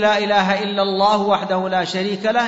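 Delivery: ordinary talk, nothing marked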